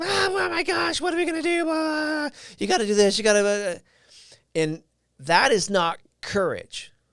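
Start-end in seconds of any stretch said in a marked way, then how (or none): 0.0-3.5 very high, shrill, frantic, rushed panicked screaming. Retelling a lady running up while an injured man was assessed, imitating her screaming. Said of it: "screaming at the top of her lungs".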